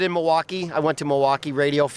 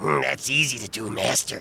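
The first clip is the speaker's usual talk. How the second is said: low, creepy monster servant voice; 5 semitones lower, 3 dB quieter than usual. Showing off the Halloween character voices he did, here doing an Igor voice. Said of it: "But Igor".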